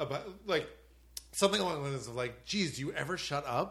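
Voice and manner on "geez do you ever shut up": ordinary talk, nothing marked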